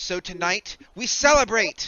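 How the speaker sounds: very high, slow, drawn-out calling out. Voicing Nemi telling the crew to celebrate: Nemi voice. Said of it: "She's like".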